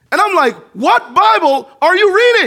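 bothered, high, loud shouted yell. A speaker bothered by the Good Friday message to walk out sad, yelling. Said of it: "I'm yelling because it just bothers me".

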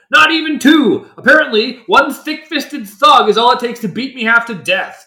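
exasperated, very high, very loud, shrill shout. Quoth answers Bast's question, shouting. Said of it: "Quoth shouted".

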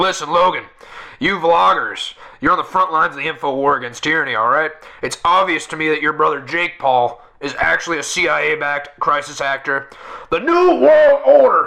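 slow, drawn-out, throat-straining put-on voice. Doing an impression that addresses vloggers, in an Alex Jones voice. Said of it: "my Alex Jones voice".

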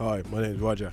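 low, groggy just-woken morning voice.

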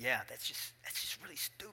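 soft, breathy whisper, barely voiced. A dad retells what he whispered in the car, retelling a whisper. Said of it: "and so I whispered".

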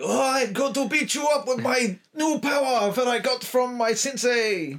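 high, shouted anime hero voice.

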